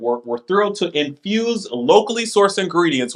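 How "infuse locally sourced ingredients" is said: ordinary talk, nothing marked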